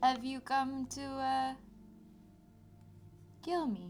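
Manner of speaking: resounding, cavern-filling voice. A voice in the cavern questions the adventurers; booming voice. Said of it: "a booming voice permeate out into the cavern".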